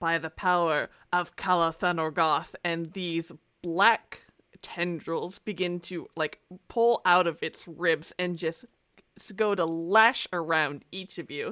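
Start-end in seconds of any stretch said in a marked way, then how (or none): 0.0-2.6 throaty, guttural, erupting monster voice. Running a game, the narrator voices a creature attacking the players: guttural creature voice. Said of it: "this sort of guttural uh, voice erupt from this creature".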